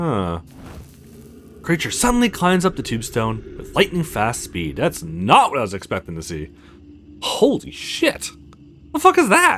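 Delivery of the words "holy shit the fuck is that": startled, loud, very high alarmed outburst. Spotting a creature in the darkness, crying out in a loud alarmed outburst. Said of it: "Keep your voice down".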